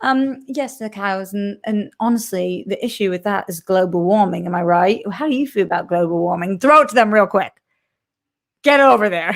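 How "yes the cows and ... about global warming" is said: clearly put-on British accent. Acting out telling a stranger at a bar her backstory: put-on British accent. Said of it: "Have a British accent".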